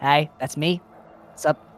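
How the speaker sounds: put-on goblin voice. A goblin near the noodle stand waves at the party; goblin voice. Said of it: "Goblin near the noodle stand".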